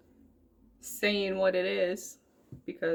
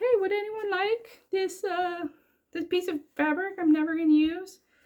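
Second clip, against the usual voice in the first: put-on voice, pitched much higher. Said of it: "doesn't sound like that".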